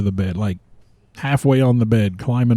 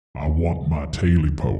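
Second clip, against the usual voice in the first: very deep, very low, hushed, spine-chilling creature voice; 7 semitones lower, 6 dB quieter than usual. Storyteller voices the tailless creature speaking to the old man, terrifying creature voice. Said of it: "in a terrifying voice that would set your hair on end".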